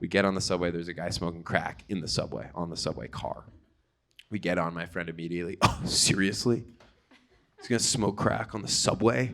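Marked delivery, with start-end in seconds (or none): 5.6-9.3 loud, pointed, disapproving tone meant to carry. Retelling a friend's remark on the subway, mocking his loud disapproving tone. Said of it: "he said it in that tone".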